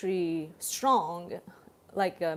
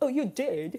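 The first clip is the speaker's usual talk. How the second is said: put-on British-style accent, pitched higher; 6 semitones higher than usual. Repeating own reply to a Super Chat: imitating own British-sounding reply. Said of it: "I just sounded like the, the British person".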